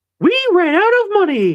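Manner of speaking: very high, tiny cartoon mouse voice. Joking that Disney has turned to AI, the speaker says this in a Mickey Mouse voice. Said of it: "maybe I can do a Mickey accent".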